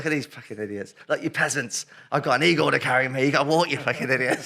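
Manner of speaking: acted-out high, pissed-off angry ranting. Retelling a friend mocking people walking up the road: imitating someone pissed off. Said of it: "he's, like, pissed off".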